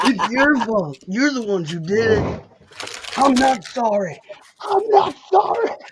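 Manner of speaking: put-on loud, swooping, climbing angry rant. Acting out an apology video that turns into a rant, mock ranting apology. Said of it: "it becomes a rant video by the end".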